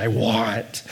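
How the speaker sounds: very low, craving, longing tone. A speaker explaining eros demonstrates how the words should be said: desirous inflection. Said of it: "you have to say it with that inflection".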